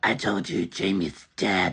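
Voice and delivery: very low, deep voice of the possessed. Retelling a prank on a man who was high, answering him while pretending to be possessed. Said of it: "pretending to be possessed".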